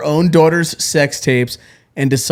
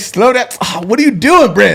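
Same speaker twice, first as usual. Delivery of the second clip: mock, fed-up, ranting yell, pitched up; 7 semitones higher than usual. Retelling how someone yelled at the guys: imitating someone yelling. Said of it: "He starts yelling at these guys like".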